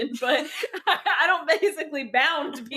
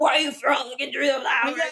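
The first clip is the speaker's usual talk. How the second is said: woman doing a put-on, fake manly voice. Mocking an audiobook narrator's voice for a male character: imitating a woman doing a manly voice. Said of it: "it's the girl trying to be, like, manly".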